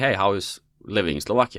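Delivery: plain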